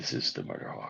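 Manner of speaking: low sultry put-on voice. Talking to viewers alone while the other speaker is frozen, in a deep sultry voice. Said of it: "This is my deep and sultry voice".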